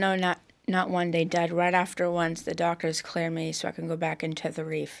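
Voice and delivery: ordinary talk, nothing marked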